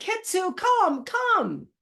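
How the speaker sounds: high, yelling call.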